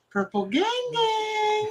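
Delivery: put-on very high, tiny, piping little child's voice. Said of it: "you just hear this little".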